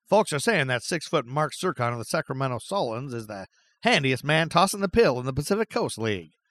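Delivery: put-on old-timey 1950s ballpark announcer delivery. Host reads a 1950 sportswriter's quote aloud, in an old baseball voice. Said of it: "say that quote in a old baseball voice".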